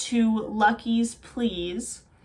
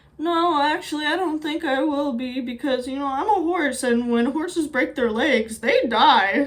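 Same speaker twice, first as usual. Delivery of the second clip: sad, small, put-on voice; 4 semitones higher than usual. Acting out the horse Boxer answering Lucky after breaking his leg, in a put-on sad little Woody Harrelson voice. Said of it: "in his sad little Woody Harrelson voice".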